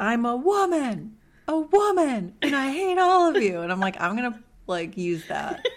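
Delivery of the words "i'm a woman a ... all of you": put-on acted, high, stretched-out girl's screaming fit. Retelling what a girl screamed before running off, mock screaming. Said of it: "She says".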